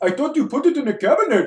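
speech with an Indian accent. Repeating a line on request, now in an indian accent. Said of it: "Let's hear it in the Indian accent again".

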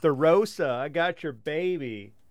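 put-on loud hollered call with the word baby drawn long. Describing a car stalling out, the speaker acts out someone yelling. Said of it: "You're like yelling like".

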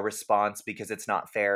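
ordinary delivery

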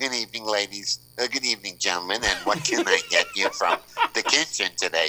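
polite delivery, speech with a harelip. Retelling how the waitress greeted the table: imitating a waitress with a harelip. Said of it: "she's got, like, you know, like, a hair lip".

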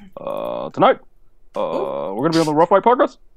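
put-on low voice with a swinging tune. Asked to repeat it, doing an impression: Barack Obama impression. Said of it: "You just gotta give me a sentence".

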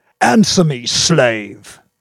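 loud, raging yell. A man slams his fist on the table and demands an answer: furious yell. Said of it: "yelled furiously".

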